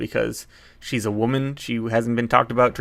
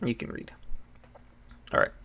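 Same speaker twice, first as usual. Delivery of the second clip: ordinary talk, nothing marked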